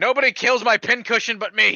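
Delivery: high-pitched, yelled, acted shout. Healing another character in the game, yelling in character. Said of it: "I'm just gonna yell out".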